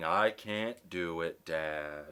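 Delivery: acted crying, blubbering, very slow and drawn out. Retelling a son pushing on a bank door: imitating someone crying. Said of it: "crying and crying, saying".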